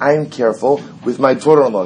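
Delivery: ordinary delivery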